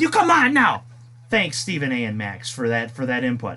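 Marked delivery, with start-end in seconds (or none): 1.3-3.6 sarcastic, much lower pitch. A show host thanks his two guests for their input, sarcastic thanks. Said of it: "you can feel the sarcasm when I say that".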